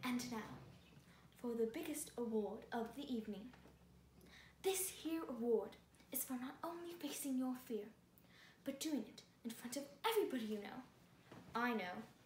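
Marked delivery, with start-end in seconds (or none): 0.0-10.8 awful, terrible put-on British accent, announcer-style. Hosting a made-up awards show as a british host, in an awful british accent. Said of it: "In my Awful accent".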